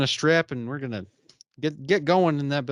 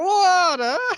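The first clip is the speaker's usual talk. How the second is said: put-on awful, very high-pitched New York accent; 5 dB louder than usual. Repeating a character's line from a scene, in a terrible New York accent. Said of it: "Terrible New York accent".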